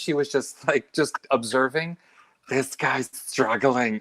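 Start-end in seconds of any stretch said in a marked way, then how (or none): 2.5-4.0 whispered voice. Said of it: "to hear it from the back of the room as a whisper".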